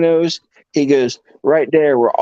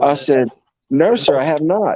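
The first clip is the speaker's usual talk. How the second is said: ordinary talk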